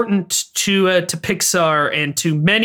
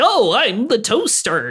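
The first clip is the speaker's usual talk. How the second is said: exaggerated cartoony voice, swooping pitch, slow; 4 semitones higher than usual. Mocking voice actors' performances as a toaster, in an exaggerated cartoony voice. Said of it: "doing very exaggerated cartoony voices".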